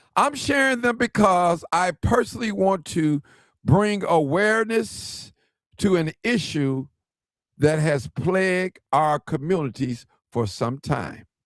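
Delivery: carefully slowed-down, deliberate reading. Reading a mother's own words aloud to listeners, reading slowly. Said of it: "I'm gonna try to read it slow".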